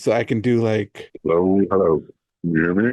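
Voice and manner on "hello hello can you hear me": low, electronically altered voice-changer filtered voice. On a podcast, testing a new gadget for the co-hosts: voice changer effect. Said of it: "but it can change my voice".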